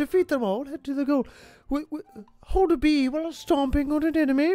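put-on acted elderly British woman voice. Reading instructions aloud in an old british lady voice. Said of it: "And I sound like the old queen now".

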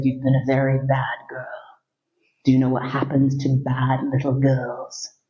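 put-on seductive, sexy voice. Retelling what a guy said the first time they hooked up, in a sexy voice. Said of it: "with this incredibly sexy voice".

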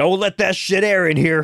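put-on yelling in a high voice. Recapping a movie, the speaker quotes the unseen guy inside: retelling a character's yell. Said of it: "he keeps yelling".

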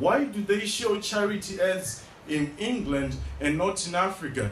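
plain

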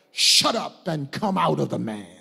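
stern, firm, low, rough, gruff voice. Retelling a story, quoting a command to a spirit; mock-stern command. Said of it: "in a stern voice".

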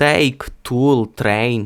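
slow Ukrainian t in take, tool, train. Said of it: "І замість того, щоб сказати".

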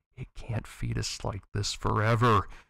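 muttering, mumbled. An inmate watches the feeding tube move down the rows of prisoners, muttered. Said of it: "muttered Fucktalica".

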